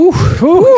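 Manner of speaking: mock exclamation, squealed very high and loud.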